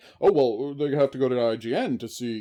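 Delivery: mocking dumb voice. Arguing against someone's claim about reviews, mimicking that person in a mocking funny voice. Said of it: "I'm doing the funny voices again".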